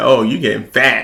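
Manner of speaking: put-on teasing delivery with a laugh. Retelling what mom would always say growing up: imitating mom teasing with a laugh. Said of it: "She would always be like, ... and laugh".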